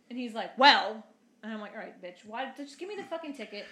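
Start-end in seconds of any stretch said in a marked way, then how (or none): 1.7-3.7 irritated, fed-up, pissed-off, cursing. Retelling a traffic stop, quoting own words to the cop: retelling own pissed-off words. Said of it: "I'm already pissed off".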